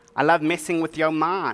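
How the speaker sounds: usual speaking voice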